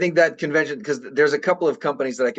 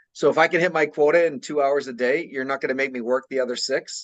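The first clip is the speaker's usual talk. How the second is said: normal talking voice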